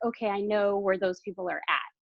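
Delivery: ordinary talk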